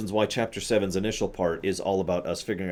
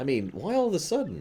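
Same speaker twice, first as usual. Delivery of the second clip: ordinary delivery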